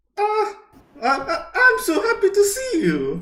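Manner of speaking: very high, lifted an octave. Coached to change voice, the speaker tries the line in a higher-pitched voice. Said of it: "just try and change your voice a little bit there".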